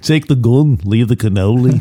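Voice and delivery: British accent with film-line style delivery. Doing a Godfather line as an impression: Alec Guinness impression. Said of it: "That's my Alec Guinness impression".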